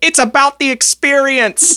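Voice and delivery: shouting. Voicing Eggplant Boy calling out from the back of the tavern: shouting. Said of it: "Eggplant Boy shouts".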